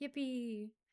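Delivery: gloomy, joyless, sad, deflated cheer. Showing a sad version of a cheer: sad yippee. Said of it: "but in a sad time, like a sad, ... like that".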